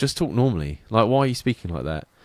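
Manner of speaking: normal talking voice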